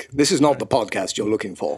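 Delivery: calm, low-pitched delivery. A new podcast regular, told to get the co-host out, uses a Jedi mind-trick voice. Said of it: "I'll just use the Jedi mind trick".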